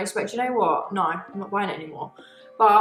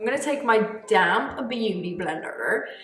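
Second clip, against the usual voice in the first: clumsy, bad, fake American accent. Narrating a makeup step while painting her face, in a bad american accent. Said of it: "that was a really bad American accent".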